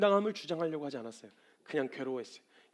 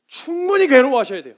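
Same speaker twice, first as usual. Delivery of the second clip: emphatic, repeated, much louder and higher.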